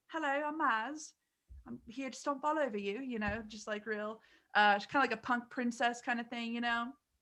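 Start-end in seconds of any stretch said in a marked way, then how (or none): 0.1-3.0 British accent, pitched up. Describing a character the speaker named, in Maz's British accent. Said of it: "She had a British accent".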